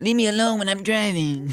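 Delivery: very high put-on cartoon voice, pushed way up. Describing how they would answer someone in the car, in a Cartman voice. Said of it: "like in a Cartman voice".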